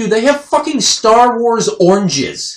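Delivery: high, loud, slow amazed outburst. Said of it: "here's a quote from Neil. He's like".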